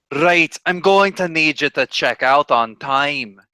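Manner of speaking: slow, rough put-on Scottish accent. Voicing a character who knocks and demands checkout: Scottish voice. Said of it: "sort of a Scottish voice".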